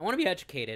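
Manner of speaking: voice breaking and cracking mid-line. Speaking to someone they feel is harassing them, voice cracking. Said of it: "Voice crack".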